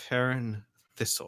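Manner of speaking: words forced through clenched teeth. Giving a character's name to an official: speaking through gritted teeth. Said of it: "through gritted teeth".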